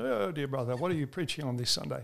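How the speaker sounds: put-on very lovely, polished British accent. Retelling what Dick would ask before Sunday preaching: imitating Dick's British accent. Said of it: "in his very lovely British accent".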